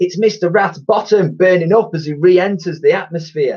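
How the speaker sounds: exclaiming in a very high voice. Ned spots a red glow descending in the morning sky, exclaiming. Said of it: "Ned exclaimed".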